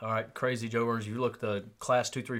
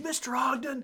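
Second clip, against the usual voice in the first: imitated screaming, scolding tone. Retelling how an instructor scolded the class leader: imitating someone screaming. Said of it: "he's screaming at him".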